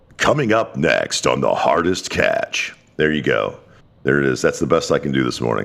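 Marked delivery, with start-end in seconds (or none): 0.2-2.8 slow, drawn-out, dramatic movie trailer announcer voice. Host announcing what's coming up next, in a movie trailer voice. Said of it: "in movie trailer voice".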